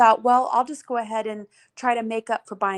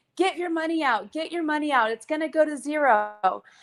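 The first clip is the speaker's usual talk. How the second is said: mock urgent yell with "zero" stretched long; 5 semitones higher, 3 dB quieter than usual. Retelling a warning yelled at everybody: imitating Richard Hart yelling. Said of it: "yelling at everybody".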